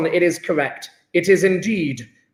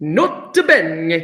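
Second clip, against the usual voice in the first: "nota bene" said with a put-on French accent. Explaining a chemistry point, the speaker says a Latin note in a French accent. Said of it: "got to say with that French accent".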